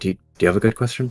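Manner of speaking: secretive, hushed half-whisper. Voicing a character who half-whispers a question to Legacy: half-whispering in character. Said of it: "he whispers to Legacy".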